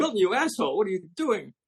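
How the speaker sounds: play-acted, piercing, very high shrieking scream. Retelling a story where someone screams from a bathroom: imitating someone screaming. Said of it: "she's screaming from the bathroom".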